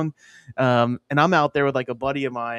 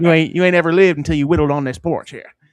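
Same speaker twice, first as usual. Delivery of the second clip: loud, put-on Northern Appalachian porch-talk accent; 3 semitones higher, 5 dB louder than usual. Joking about sitting on a porch whittling: put-on Northern Appalachian accent. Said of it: "It's Northern Appalachia, man".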